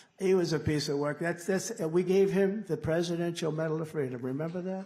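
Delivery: plain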